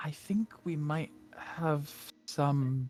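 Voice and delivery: whispered speech. Voicing a character who whispers to Evelyn: whispering. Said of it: "whispers to Evelyn".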